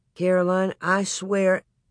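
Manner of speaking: ordinary talk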